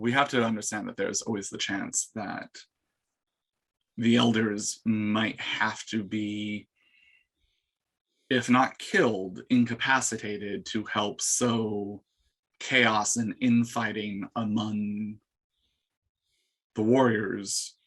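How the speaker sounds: quiet hushed stage whisper. Voicing a character who leads the group while crouched: quiet stage whisper. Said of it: "essentially stage whispering at this point".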